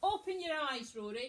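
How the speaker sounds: big loud voice. First-aid demonstration, trying to wake the casualty, in a nice big voice. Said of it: "in a nice big voice".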